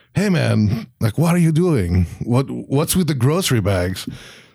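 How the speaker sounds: vague fake French accent. Acting out someone questioning a man, in a vague fake french accent. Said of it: "I don't know what accent I'm doing right now. That was like not really French".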